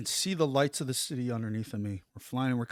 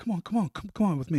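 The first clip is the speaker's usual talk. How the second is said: mock urgent, high-pitched voice; 6 semitones higher, 4 dB louder than usual. Retelling how a man called him to follow, imitating an urgent call. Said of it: "He's very urgent".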